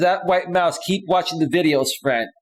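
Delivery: ordinary talk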